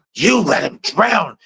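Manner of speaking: aggressive, menacing, scary, high-pitched. Praising an actress's portrayal of a killer: aggressive Betsy Palmer impression. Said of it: "She was aggressive".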